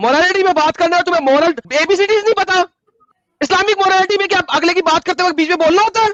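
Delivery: angry, loud shouting.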